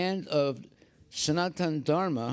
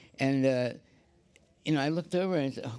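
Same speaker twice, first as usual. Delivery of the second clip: usual speaking voice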